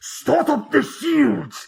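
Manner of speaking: very high voice, muffled behind cupped hands. Retell how a guy put his hands before his mouth to do a General Grievous voice. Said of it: "puts his hands in front of his mouth".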